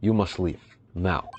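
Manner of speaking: bad put-on Russian accent. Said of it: "messing up the Russian accent already".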